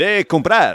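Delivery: phony Spanish radio commercial announcer voice. Demonstrating the voice used in a phony ten-second commercial: Spanish radio voice. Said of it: "I do it in my Spanish radio voice, kind of like this".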